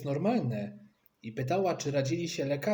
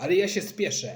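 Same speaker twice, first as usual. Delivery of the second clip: loud, yelled-out shout; 4 semitones higher, 5 dB louder than usual. The father, kept waiting while the mother bathes, shouting. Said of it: "krzyknął tata".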